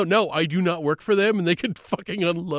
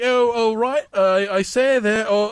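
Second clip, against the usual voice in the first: bad put-on British accent, higher and slower; 3 semitones higher than usual. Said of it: "Not a good British accent".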